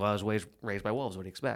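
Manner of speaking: dry, deadpan, underplayed sarcasm. Quoting a favourite movie line: imitating Wolf's dry sarcasm. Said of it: "It's that dry humor".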